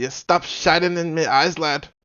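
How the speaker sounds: loud, high, amateur attempted Jamaican accent. Voicing a character in a group story, attempted jamaican accent. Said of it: "Was that Jamaican?".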